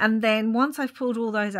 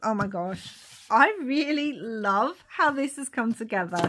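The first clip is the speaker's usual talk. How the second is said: smile audible in the voice while talking. Speaker talking to viewers about their finished work: smiling while talking. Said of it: "you could hear it in my voice, I'm sure, that I am just smiling".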